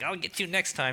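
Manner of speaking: hammy, mustache-twirling eighties cartoon villain voice. Recalling the villain's parting line: mustache-twirling cartoon villain. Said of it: "the villain mustache".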